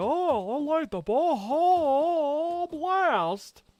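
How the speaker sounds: very high, very slow voice. Retelling a clip of Hank waking up at night: Hank Hill voice. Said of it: "a clip of Hank just waking up in the middle of the night going".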